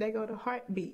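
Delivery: plain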